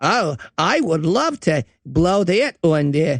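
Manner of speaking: put-on speech with an Australian accent.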